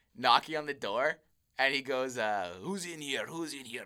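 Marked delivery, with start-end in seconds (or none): 2.2-3.8 put-on hushed, soft Eastern European accent. Retelling someone knocking on the door while the speaker hid, imitating Mr. Ivan. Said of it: "that Eastern European accent".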